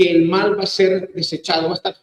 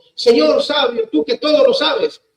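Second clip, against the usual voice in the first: mocking ironic tone, higher; 6 semitones higher than usual. Retelling a parable, a young man taunting an old sage: imitating ironic mockery. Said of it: "burlándose con ironía".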